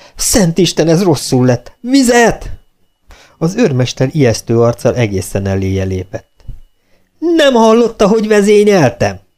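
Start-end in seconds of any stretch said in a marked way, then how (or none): 0.2-2.5 sudden, high outcry. Narrating a woman who claps her hands and cries out: cried out. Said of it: "és így kiáltott".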